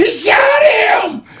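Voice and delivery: put-on sudden, shrill, very high shriek. Retelling a guard shooting in the block: imitating own high-pitched scream. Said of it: "I screamed".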